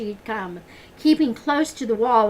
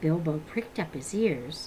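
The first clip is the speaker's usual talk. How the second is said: plain reading voice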